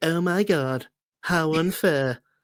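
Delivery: put-on lispy voice. Mocking the one who wears a cowboy hat: lispy Filoni impression. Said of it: "a lispy voice".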